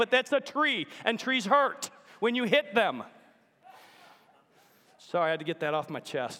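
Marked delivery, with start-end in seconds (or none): 0.0-3.0 put-on full-on yelling in sheer exasperation. Retelling what you yelled at her an inch from a tree: retelling a yell. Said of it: "Excuse me for yelling at you".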